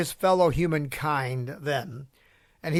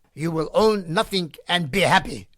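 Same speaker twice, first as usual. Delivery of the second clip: bad, heavy, thick put-on German accent. Quoting a man he criticizes, the speaker uses a thick German accent. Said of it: "in his thick German accent".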